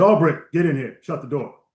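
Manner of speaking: big-personality, commanding admiral voice. Retelling being called into the admiral's office, quoting his order in Admiral Pease's booming voice. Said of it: "booming personality and voice".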